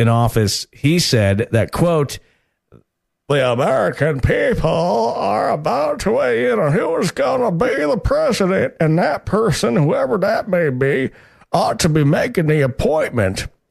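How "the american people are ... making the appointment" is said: very high-pitched, creaky voice. Quoting a senator's words from the election: Mitch McConnell impression. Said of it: "way better than your Trump impression".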